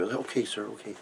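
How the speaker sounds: fake shy, quiet voice. Retelling answering a doorman, imitating a timid voice. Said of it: "timid, real timid".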